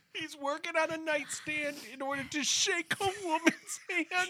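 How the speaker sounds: talking through laughter. Re-explaining the nightstand bit, unable to keep it together: laughing while talking. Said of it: "I cannot keep it together".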